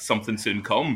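ordinary talk, nothing marked

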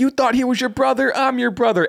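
mock shrill, very high-pitched yelling outburst. Retelling a wrestling scene, imitating Jimmy yelling. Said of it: "Jimmy yelling".

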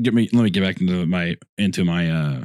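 dropping into a very low voice. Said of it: "Texting voice".

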